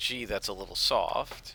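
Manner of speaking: ordinary talk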